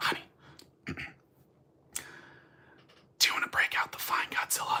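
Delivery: very quiet, barely audible whisper. Speaker retelling what a woman whispers to him when guests visit, retelling a whisper. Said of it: "she whispers to me".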